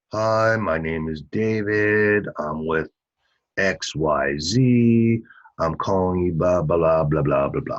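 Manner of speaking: very low half-asleep drone, Z drawn out. Demonstrating how a sales call sounds when made slumped at a desk, sleepy falling-asleep voice. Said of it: "That's exactly how it sounds. You sound like you're falling asleep".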